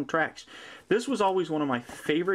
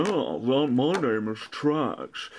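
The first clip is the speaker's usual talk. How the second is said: slow, drawn-out, pompous, self-important boastful voice; 3 semitones lower than usual. Speaker describes a favourite egomaniac character; Trax impression. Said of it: "he is a egomaniac".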